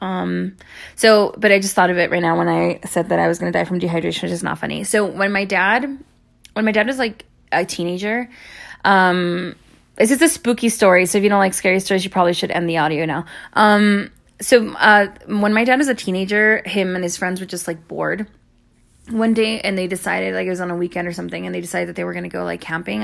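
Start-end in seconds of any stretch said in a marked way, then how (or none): 20.3-21.5 fast, rushed rambling aside. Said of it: "I'm talking really fast".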